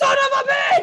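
very high, shrill, angry, furious shout. Retelling a man's angry outburst about developers: imitating someone getting mad. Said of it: "mad about it".

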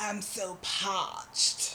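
put-on British accent. Describing getting really thirsty, the speaker says it in a British accent. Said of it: "With a British accent?".

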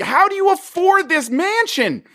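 shrill, very high-pitched screaming. Speaker reenacts yelling at the screen while watching a movie: retelling screaming at a movie. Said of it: "I'm screaming at my movie".

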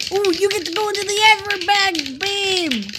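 very high, excited comedian-style voice. Playing a word game with a partner, doing a Bill Cosby impression. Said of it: "I just did my Bill Cosby impression".

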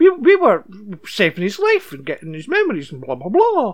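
swooping, sing-song voice with widely swinging pitch. Discussing how a show's story changed, the speaker does a Nina Sharp impression. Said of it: "Do you like my Nina Sharp impression?".

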